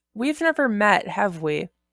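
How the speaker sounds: ordinary delivery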